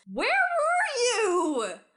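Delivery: drawn-out, shrill, booming, swooping, very high yell. Recounting being grabbed from behind in a crowd, retelling someone's yell. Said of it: "and yells".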